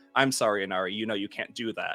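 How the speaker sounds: deadpan, toneless voice. Retelling stopping a game to address a chat member, retelling a deadpan apology. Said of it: "turns deadpan to the camera and says".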